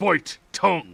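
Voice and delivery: very loud, high, harsh, barked commanding tone. Voicing a commander ordering someone to bite their tongue: commanding. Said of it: "he commands another time".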